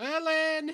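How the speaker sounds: high-pitched loud shouting.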